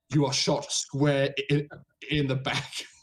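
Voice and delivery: plain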